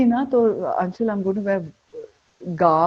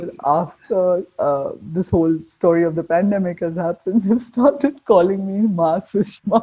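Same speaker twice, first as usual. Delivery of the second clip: talking while cracking up, laughing through the words. Telling the other speaker how Delhi friends' nickname changed: laughing while talking. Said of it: "sorry, I'm laughing".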